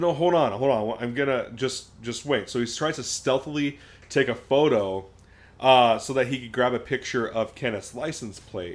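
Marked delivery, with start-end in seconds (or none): none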